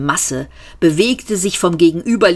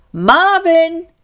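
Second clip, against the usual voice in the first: loud calling out, pitched very high; 11 semitones higher than usual. Seyfort calls to Marvin further back in the corridor, calling out. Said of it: "rief Seyfort".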